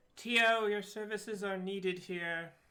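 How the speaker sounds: very loud yell, called over the shoulder. Calling a companion over during a fight: yelling over the shoulder. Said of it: "yell back over my shoulder".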